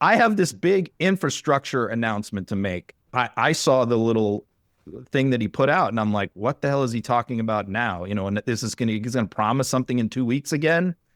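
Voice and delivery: ordinary talk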